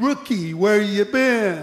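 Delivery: mocking, needling, sarcastic tone. Retelling how a coworker greeted the speaker back at the guard cage: imitating Pierce's sarcastic tone. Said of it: "he said sarcastically".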